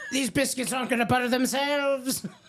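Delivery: put-on very high little old woman voice. Voicing a woman in a picture riding a butter churner, in an old lady voice. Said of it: "your old lady voices are excellent".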